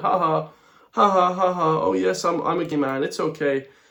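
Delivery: high, jokey voice, laughing through the words. Mocking Leo Varadkar's podcast appearances, imitating Leo Varadkar laughing. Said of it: "comes on these podcasts laughing and joking".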